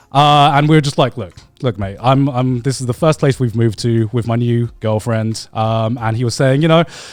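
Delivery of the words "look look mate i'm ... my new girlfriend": ordinary talk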